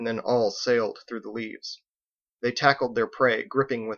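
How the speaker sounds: ordinary delivery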